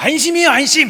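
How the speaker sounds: raspy, very loud, very high-pitched rough shout. Retelling a phone caller saying 안심이에요 안심: very loud, rough voice. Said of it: "막 되게 막 크게 막 크게 안심이에요 안심 이렇게 얘기하는 거예요".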